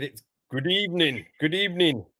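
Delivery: ordinary talk, nothing marked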